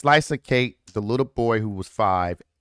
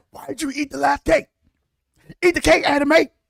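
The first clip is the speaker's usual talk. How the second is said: mock, very high angry yelling; 4 dB louder than usual. Imagining reacting to someone eating the last cake: mock yelling.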